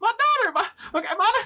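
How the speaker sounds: high-pitched, fast, startled yelp in gnome voice. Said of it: "higher pitched voice".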